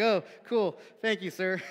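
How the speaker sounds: sarcastic, mock grateful put-on tone. Retelling a reply to a man's backhanded remark, mock-grateful thanks. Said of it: "mock gratitude after backhanded compliment".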